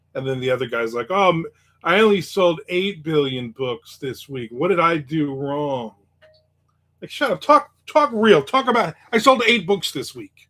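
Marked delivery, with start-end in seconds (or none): none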